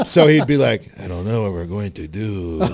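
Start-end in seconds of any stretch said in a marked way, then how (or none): 1.0-2.6 low, soft put-on Mexican accent. Speaker acts out a film actor switching accents mid-movie, Steven Seagal's Mexican accent. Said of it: "started doing a Mexican accent".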